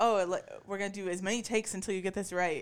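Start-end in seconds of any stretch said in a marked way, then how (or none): none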